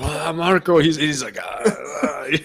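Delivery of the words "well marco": just a hint of put-on Cuban accent. Imitating a politician's family at home, with a hint of cuban accent. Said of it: "you put just a hint of accent on there".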